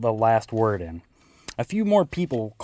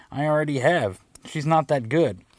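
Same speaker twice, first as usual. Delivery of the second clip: ordinary delivery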